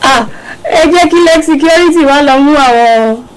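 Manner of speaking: high mock wailing, pleading voice. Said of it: "and I was like".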